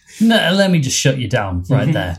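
ordinary delivery

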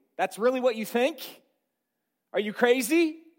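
dry, sarcastic, incredulous tone. Acting out what Jesus is saying to the servant: sarcastic, as Jesus.

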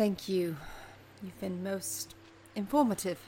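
sarcastic, condescending tone. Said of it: "said with a bit of condescension".

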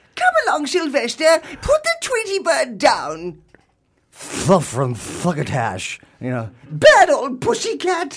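put-on very high, swooping, sing-song old granny voice. Suggesting a voice for the uncast Granny role, the speaker does a Granny voice. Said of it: "trying to get the voice of Granny".

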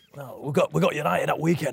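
rough, gravelly voice. Asked how he sounded, the speaker does a gravelly Sean Dyche impression. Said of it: "Such a gravelly voice in it".

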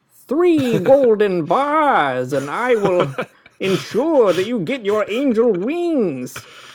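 booming, swooping archangel voice, stretched out. Joking with a co-host about what heaven would be like as a game: Archangel Raphael voice. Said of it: "That's the Archangel Raphael".

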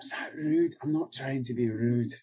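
worried, anxious whisper. Voicing a character asking a companion if he was rude: worried whisper. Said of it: "and sort of whispers".

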